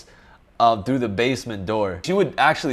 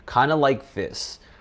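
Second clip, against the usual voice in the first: calm, controlled, collected and composed delivery; 3 semitones lower, 5 dB quieter than usual. Showing how to talk at an important meeting, in slowed-down deliberate speech. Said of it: "I would slow down the way I talk".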